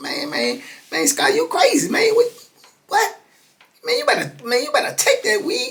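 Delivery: very high, squeaky voice, swooping and rising. Quoting Boo calling him crazy, in Boo's high squeaky voice. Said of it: "Boo got that old high squeaky voice".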